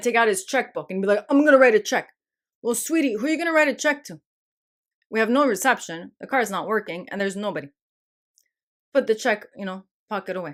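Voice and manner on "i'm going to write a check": loud, frantic, panicked man's voice. Speaker acts out how he would react with no phone reception, imitating a panicking man. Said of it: "he's gonna start panicking".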